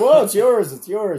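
flustered, nervous, high-pitched voice. Retelling Dad's reply about the found gun: imitating a nervous dad. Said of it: "he's so nervous".

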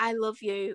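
whispered speech. Retelling a voice heard overhead on a TV show: imitating someone whispering. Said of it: "as a whisper, Katie whispering".

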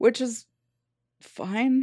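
begrudging, reluctant tone, slightly high-pitched. Conceding a point to another speaker in the conversation, begrudging. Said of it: "She says begrudgingly".

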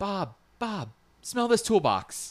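mock, very high, drawn-out hollered yell. Speaker retelling how one person yelled to another, retelling a yell. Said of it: "yelled to Bob".

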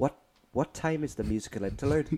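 pretend whisper. Acting out a player whispering to the striker: pretend whispering to a player. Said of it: "Just whispering to the striker".

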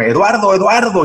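mock high-pitched yelling. Retelling a phone call from the husband: imitating someone yelling. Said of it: "me llama el marido gritándome".

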